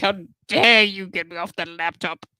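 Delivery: loud, indignant, pissed-off cat voice. Voicing the cat that was pushed off the laptop, voicing a pissed-off cat, mock angry. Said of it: "The cat is so pissed at me. She's like".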